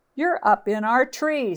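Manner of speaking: cross, irritated snap. Reading a story aloud, the crows answer Timothy, snapping crossly. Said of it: "snapped the crows crossly".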